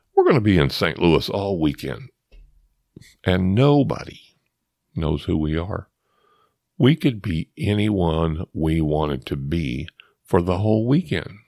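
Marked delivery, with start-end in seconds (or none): none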